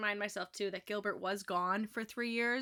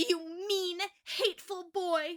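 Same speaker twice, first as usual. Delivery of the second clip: high, slow, drawn-out impassioned exclamation; 9 semitones higher than usual. Reading a novel aloud, a girl lashing out at a boy: exclaiming passionately. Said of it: "she exclaims passionately".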